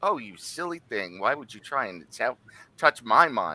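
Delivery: female voice, giggling. Game master voicing a statue answering a player's psychic link, giggling female voice. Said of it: "a giggling female voice that goes".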